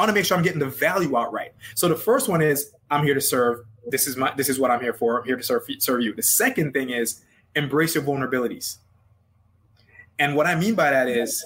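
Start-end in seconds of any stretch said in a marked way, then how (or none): none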